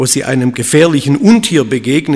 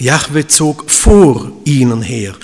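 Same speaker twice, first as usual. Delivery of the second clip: "vor" carries the main weight. Rereading a verse to show where the emphasis lies: stress on vor. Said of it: "Jetzt liegt die Betonung auf dem Vor".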